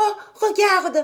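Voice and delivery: excited, very high voice. Heidi calls out to Pierre, ever more excited. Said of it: "toujours plus excitée".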